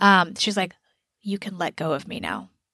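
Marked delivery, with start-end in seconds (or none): 1.2-2.5 very quiet, very low, hushed under-the-breath mutter. Retelling what a woman on the show said: imitating a mutter under breath. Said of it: "she mutters, like, under her breath".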